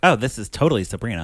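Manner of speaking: plain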